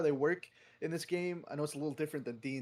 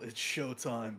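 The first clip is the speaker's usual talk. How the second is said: stage-whispered, private, self-encouraging aside; 3 semitones lower than usual. Voicing a character preparing to hold his action: whispering to himself. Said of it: "he'll whisper a little".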